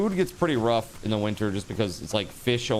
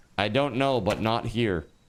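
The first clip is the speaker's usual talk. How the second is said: usual speaking voice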